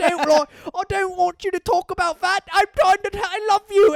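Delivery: put-on British accent. Describing a scene, the speaker quotes the woman's line in a British accent. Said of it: "she's got a British accent".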